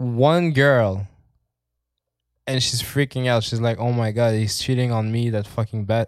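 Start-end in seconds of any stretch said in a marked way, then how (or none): none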